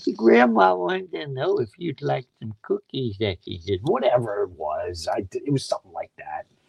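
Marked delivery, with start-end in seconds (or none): 0.2-3.8 put-on elderly grandma-style old lady voice. Retelling doing characters to make her laugh, in an old lady voice. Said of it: "I'd do this old lady voice".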